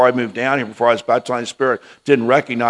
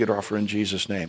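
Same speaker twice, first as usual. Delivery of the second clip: under breath, much quieter, lower; 3 semitones lower, 9 dB quieter than usual. Speaker retells what he said while a woman leaned in to hug him, under his breath. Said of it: "underneath my breath".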